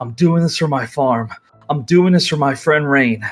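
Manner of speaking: hushed, jittery, nervous half-whisper. Narrating Todd facing his opponent in the arena, half-whispering to himself. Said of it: "He whispers to himself".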